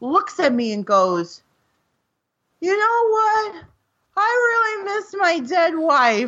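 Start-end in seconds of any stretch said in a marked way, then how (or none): 2.6-6.3 put-on tipsy old man voice, pitched higher. Retelling what a stranger said at a train stop: imitating a drunk old man. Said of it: "drunk old guy comes up to me".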